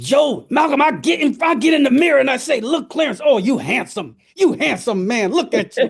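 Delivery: emphatic, forceful, hyped-up tone with full conviction. Retelling a man's pep talk to himself in the mirror, imitating forceful, convinced self-hype. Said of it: "he said it with such force and such conviction".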